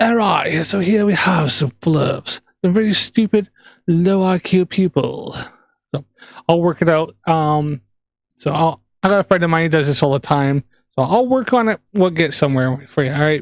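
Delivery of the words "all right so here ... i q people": nature documentary narrator voice. Showing chat a planned voiceover idea: David Attenborough style narration. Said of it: "David Attenborough sort of style".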